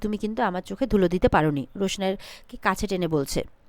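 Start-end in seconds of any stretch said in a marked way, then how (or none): none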